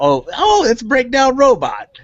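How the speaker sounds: very high, swooping, smug know-it-all tone. Showing how the clip should sound, cutting in to correct: know-it-all interrupting correction. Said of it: "say it like you're interrupting me because you know more than me".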